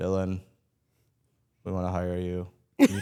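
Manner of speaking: flat low monotone. Retelling a phone call offering him a job, imitating Tommy Dreamer's monotone. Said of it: "you know his monotone".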